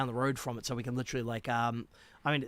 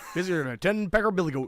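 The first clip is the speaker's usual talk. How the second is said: put-on Canadian accent, raised and high; 6 semitones higher, 7 dB louder than usual. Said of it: "It suits a Canadian accent for sure".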